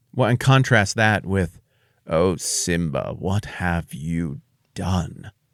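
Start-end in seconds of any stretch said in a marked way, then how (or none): 2.1-5.3 slow, dragged-out, slithering voice. Discussing blaming language, the speaker demonstrates with Scar's slithering blame voice. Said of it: "that voice of slithering blame that you get from Scar".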